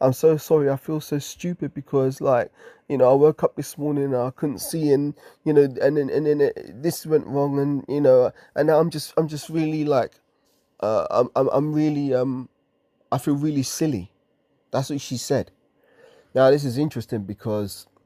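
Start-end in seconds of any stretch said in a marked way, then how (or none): 0.0-14.1 mock near-tearful, stumbling voice on the verge of crying. Retelling what a woman said after he offered to take her there, imitating someone near tears. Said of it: "she was almost like she was gonna cry".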